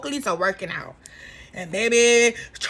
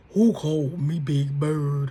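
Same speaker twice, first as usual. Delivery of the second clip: very deep, low, dropped-down mocking voice; 10 semitones lower than usual. Retelling how Portia mocked Angela, in Portia's deep voice. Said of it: "in that deep ass voice".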